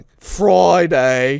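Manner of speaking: attempted Birmingham accent. Saying the days of the week in an attempted Birmingham accent. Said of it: "That's not a Birmingham accent".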